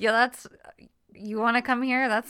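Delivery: put-on apathetic, indifferent tone. Retelling his answer to an invitation: imitating an apathetic reply. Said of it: "he's just so apathetic about it".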